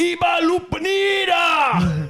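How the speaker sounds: very high, shrill, swooping fake German yell, "Lupanida" stretched. Retelling a movie scene with a German barbarian: imitating a yell in German. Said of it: "the German guy just yells out in German".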